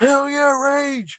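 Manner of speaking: put-on high, play-acted rowdy drunken yelling scream. Speaker recalls moshing drunk at a Wu Tang concert; retelling a drunk scream. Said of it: "is screaming like".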